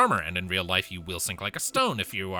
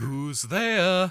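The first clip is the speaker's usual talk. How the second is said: bad, higher-pitched put-on cartoon-bear voice; 11 semitones higher, 4 dB louder than usual. Breaking into a Pooh impression mid-conversation. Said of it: "that was a terrible poo impression".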